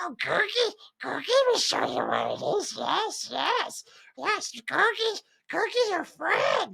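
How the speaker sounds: very high, rough, raspy, swooping voice. Retelling how a movie character talks: imitating Gurgi's voice. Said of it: "even the way he sounds and talks, he's just like".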